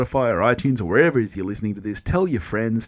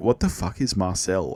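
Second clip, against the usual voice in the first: usual speaking voice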